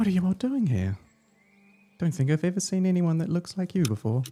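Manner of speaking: tiny high voice of a little creature. A small waving figure answers the travelers' greeting, little voice. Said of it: "You hear a little voice come back".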